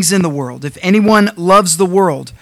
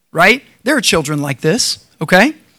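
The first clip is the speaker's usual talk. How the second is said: plain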